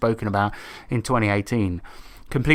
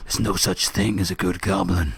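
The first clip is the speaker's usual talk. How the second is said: deep, low hero voice, dropped way down; 6 semitones lower than usual. Showing how the English Goblin Slayer sounds, in a Solid Snake voice. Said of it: "he sounds a bit like fucking Solid Snake, where he's just like".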